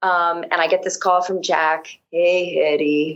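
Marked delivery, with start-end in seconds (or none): 2.1-3.2 put-on old burnout voice, lower. Retelling a phone call from Jack: imitating an old burnout voice. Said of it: "this old burnout voice".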